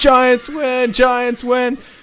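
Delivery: mock very high, stretched-out sportscaster yell. Retelling the end of the game, the announcer: imitating an announcer yelling. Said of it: "The announcer's, like, yelling".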